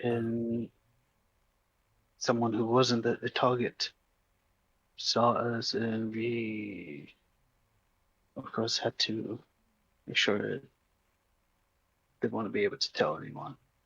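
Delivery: emotionless, flat stage whisper, we drawn out. A character speaking at a grave, in a half-whisper. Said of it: "You can tell I am very, it's very difficult for me to show emotion, / You will look around and then be near everyone in a whisper tone".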